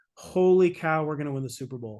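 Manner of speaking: usual speaking voice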